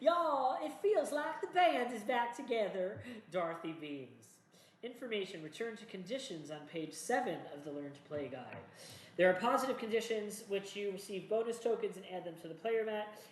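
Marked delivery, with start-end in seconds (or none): 0.0-3.0 easy put-on southern drawl, high and slow. Game narrator voicing Dorothy as the group sets off through town, southern accent. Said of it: "we gotta do a southern accent for her".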